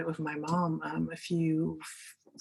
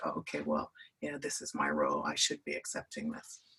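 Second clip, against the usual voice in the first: low, ashamed, resigned inner voice. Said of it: "we then carry that shame".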